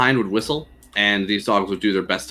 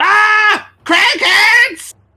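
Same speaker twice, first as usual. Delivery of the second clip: shrill, deafening, very high-pitched dwarf shriek; 9 dB louder than usual. Two dwarves in the back, chased by cragcats, screaming. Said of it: "two dwarves screaming".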